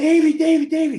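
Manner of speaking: piercing, shrill, very high-pitched, very loud scream. Retelling a guy running in and screaming the speaker's name, imitating someone screaming. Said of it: "screaming my name".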